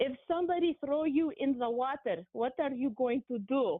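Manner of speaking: put-on English spoken with a Greek accent. Recalling his father's advice when he feared failing med school exams, in a Greek accent. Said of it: "in English with his, his uh, Greek accent".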